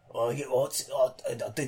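put-on gruff old voice. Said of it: "Really gruff old long shot".

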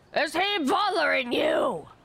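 talking with mouth full of food. Retelling what they asked while eating a biscuit, acting out talking with mouth full. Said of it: "half my mouth full".

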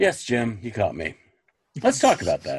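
plain, matter-of-fact tone with swooping pitch. Imagining how Lois would answer when caught: matter-of-fact, imitating Lois. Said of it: "Lois being very matter of fact and being like".

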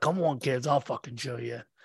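hushed, muttered, bitter army sergeant voice. Mocking how the other speaker sounds, acting out a mock-bitter Vietnam War sergeant. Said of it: "you sound like a bitter sergeant from a fucking Vietnam War".

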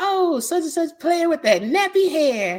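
high, slow mock lady voice. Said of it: "She was like".

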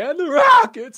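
very high, very loud cracking note. Retelling a botched anthem high note: imitating a voice crack on a high note. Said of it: "voice cracked like he was going through puberty".

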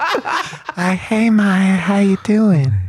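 very high, very slow, unhurried voice. Doing an impression of the other speaker at home: impression of the other speaker. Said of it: "an impression of you to my wife".

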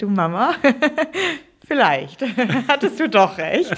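sheepish, laughing through. Speaker retells creeping back to their mom, retelling a sheepish admission. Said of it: "bin dann ganz kleinlaut wieder zu meiner Mama angekrochen".

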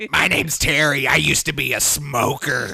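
put-on very loud, old heavy-smoker waitress voice. Imitating a woman who talks like an old 1950s bar waitress, heavy-smoker waitress voice. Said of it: "She's just a heavy smoker".

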